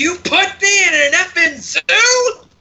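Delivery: very high, slow, all-out top-of-the-lungs scream. Voicing a character who has been put in a zoo: screaming at the top of lungs. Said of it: "just screams at the top of his lungs".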